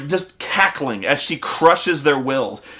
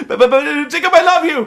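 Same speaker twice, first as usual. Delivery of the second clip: put-on stammering voice, pitched much higher; 11 semitones higher, 5 dB louder than usual. Retelling a scene between Bella and Jacob, imitating Bella stammering. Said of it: "And Bella's like".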